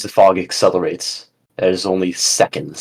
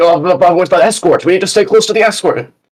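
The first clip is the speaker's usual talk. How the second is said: very high, flustered, panicked blubbering; 12 semitones higher, 7 dB louder than usual. Game master voicing an unprepared ship captain, blubbering. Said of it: "He's just kind of blubbering".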